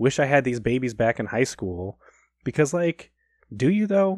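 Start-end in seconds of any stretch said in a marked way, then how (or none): none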